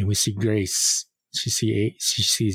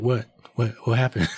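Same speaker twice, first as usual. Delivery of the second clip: ordinary talk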